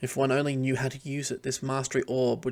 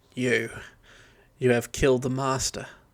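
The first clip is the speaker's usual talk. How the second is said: put-on Australian-accented dwarf voice; 4 dB louder than usual. Voicing a dwarf thrall: Australian-accented dwarf voice. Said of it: "making him sound like a really Australian ochre dwarf".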